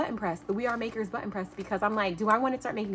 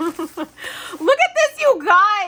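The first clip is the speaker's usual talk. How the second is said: very loud, swooping, thrilled excited yelling; 9 semitones higher, 9 dB louder than usual. Opening a gift from a friend and showing viewers: excited yelling. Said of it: "Why am I yelling? I'm just so excited".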